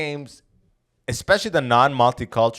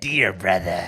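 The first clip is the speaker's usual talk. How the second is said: sinister, low villain voice; 4 semitones lower than usual. Retelling how a game character spoke, imitating a villainous voice. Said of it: "And he goes".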